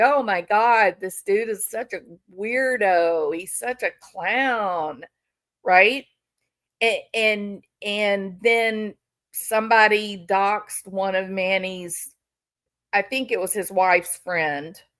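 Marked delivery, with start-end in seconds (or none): 0.0-5.0 amused, laughing, joking, "clown" drawn out. Retelling how Vinny responded to the doxing: imitating Vinny joking and laughing. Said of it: "joking around and laughing, like".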